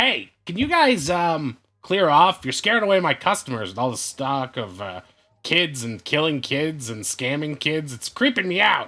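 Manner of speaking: witch-like woman voice. Voicing a shop woman who slaps the counter, telling the group to clear off: stereotypical witch shopkeeper. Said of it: "a woman who's dressed like, uh, what looks to be, like, sort of a stereotypical witch".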